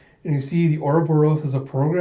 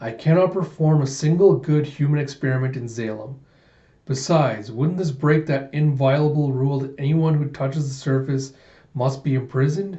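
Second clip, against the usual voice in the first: ordinary talk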